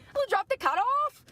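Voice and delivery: put-on unconvincing Irish accent, pitched very high. Retelling meeting a woman from Ireland, the speaker quotes her imitating an Irish accent. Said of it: "That's an Irish accent?".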